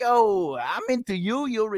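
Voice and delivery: put-on Italian accent. Speaker mocking how italian men are portrayed in movies, stereotypical movie italian guy. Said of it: "They're like".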